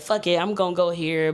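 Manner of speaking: ordinary delivery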